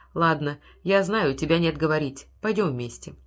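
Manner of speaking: plain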